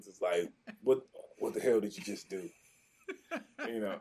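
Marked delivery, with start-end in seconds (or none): 0.8-2.5 mimicked gravelly voice. Retelling a man pulling him aside, imitating his raspy voice. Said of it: "he had this real raspy voice".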